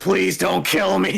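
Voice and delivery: high, rough scream at the top of the lungs. Narrating a game scene to the players, Elkin Bling screaming at the top of his lungs. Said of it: "screaming at the top of his lungs".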